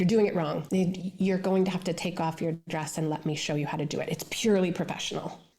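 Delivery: ordinary delivery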